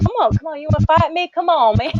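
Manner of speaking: high, goading put-on Texas country accent. Speaker acts out how old Texas country men picked fights, imitating a Texas man's taunt. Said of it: "they would just say".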